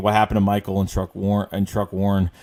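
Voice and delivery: plain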